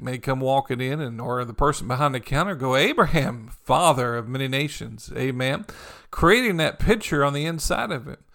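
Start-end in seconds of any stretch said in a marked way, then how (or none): none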